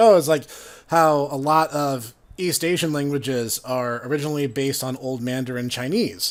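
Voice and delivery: ordinary talk, nothing marked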